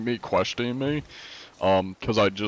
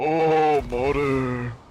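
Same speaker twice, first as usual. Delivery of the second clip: winded, breathless put-on old man voice, pitched up; 6 semitones higher, 3 dB louder than usual. Showing the old man voice he keeps for disguises: old man voice. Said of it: "that's the old man".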